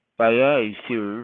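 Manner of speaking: pirate sidekick character voice. Recalling voicing a puppet character like Smee, Smee voice from Peter Pan. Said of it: "I had to do Smee's voice".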